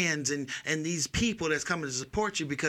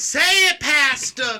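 very loud, very high, cry-like call; 10 semitones higher, 12 dB louder than usual. Imitating a church mother calling out to the pastor: imitating a church mother. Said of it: "I'm gonna be like that mother".

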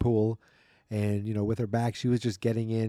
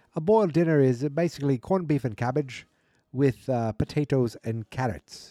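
put-on bad Irish accent; 4 semitones higher, 3 dB louder than usual. Explaining what a boiled dinner is to listeners, in a bad irish accent. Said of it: "I'm going to try to do a bad Irish accent".

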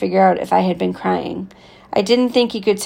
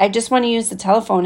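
ordinary delivery

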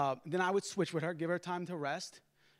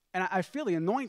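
ordinary delivery

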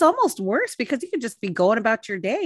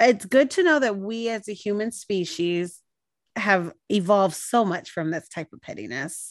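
plain

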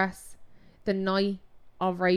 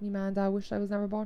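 usual speaking voice

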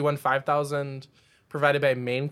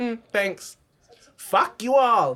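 put-on rude, dismissive tone, higher and louder; 8 semitones higher, 5 dB louder than usual. Retelling an eliminated contestant's rude exit, imitating Yara's rude exit. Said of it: "She's like".

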